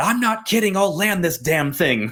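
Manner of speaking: put-on angry dad voice. Retelling what the pilot told the passengers: imitating an angry dad. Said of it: "he's sitting there like an angry dad".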